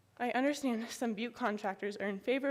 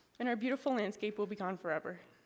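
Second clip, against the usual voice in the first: ordinary talk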